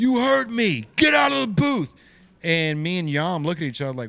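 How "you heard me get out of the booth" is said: angry put-on old man yell, higher and louder. Retelling an old man ordering them out of the booth: imitating an old man yelling. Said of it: "bright red in the face, yelling".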